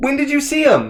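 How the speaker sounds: high calling voice. Calling up to a man on the third floor: shouting up to someone. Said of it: "I don't wanna scream anymore".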